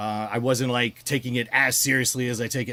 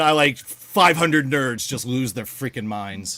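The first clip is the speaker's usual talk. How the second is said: ordinary talk, nothing marked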